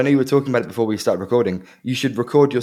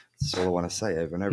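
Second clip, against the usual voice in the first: ordinary talk, nothing marked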